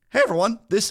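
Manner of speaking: voice cracking. Opening a podcast episode greeting everyone, voice cracking. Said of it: "my voice cracked".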